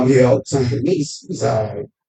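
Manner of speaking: mock very low, dull, flat, unexcited tone. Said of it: "he made it sound like".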